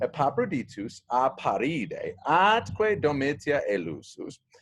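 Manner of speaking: plain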